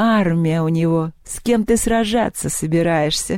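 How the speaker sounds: mocking, derisive guffawing laugh. Still guffawing at his boast about an army, she mocks him. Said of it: "захохотала Поляндра".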